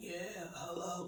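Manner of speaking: ruined, cigarette-damaged smoker's voice. Retelling how years of smoking changed the voice: imitating own past deep voice. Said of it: "my voice literally sounded like".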